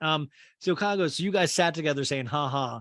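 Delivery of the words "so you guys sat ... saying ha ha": normal talking voice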